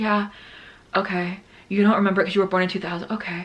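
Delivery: put-on deadpan delivery. Retelling a reply to the guy on a shared task: imitating own deadpan talk. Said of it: "so, like, deadpan talking to the guy".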